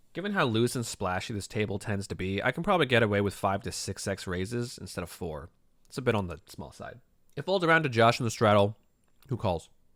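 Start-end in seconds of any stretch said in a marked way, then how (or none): 7.4-9.7 speaking with a mouth full of food. Narrating a poker hand while eating cheese, talking with mouth full. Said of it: "I'm eating cheese right now".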